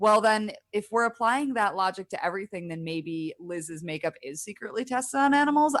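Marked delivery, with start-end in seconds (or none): none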